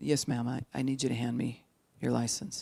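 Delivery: hushed, quiet, calm, even-toned voice. Explaining how a skilled officer talks to a driver at the car: quiet voice. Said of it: "the person might be talking really fast".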